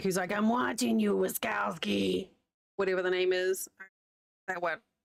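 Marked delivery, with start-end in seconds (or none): 0.3-2.3 rough, creaky, raspy heavy smoker's voice. Pitching a yarn that makes you sound like a heavy smoker, Roz voice from Monsters Inc. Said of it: "make you sound like you've been smoking a carton a day".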